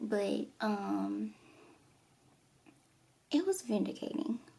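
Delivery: choked up, teary, slow, on the edge of tears. Speaker recounting a past surgery experience: teary-eyed. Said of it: "I'm getting teary eyed".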